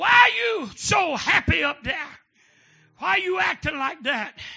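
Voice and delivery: loud, high holler. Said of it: "the master hollered".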